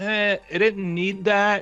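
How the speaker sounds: indifferent, unimpressed tone.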